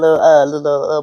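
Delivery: put-on low grandmother voice. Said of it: "Why you sound like somebody grandma?".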